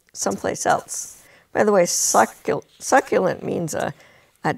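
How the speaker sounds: ordinary delivery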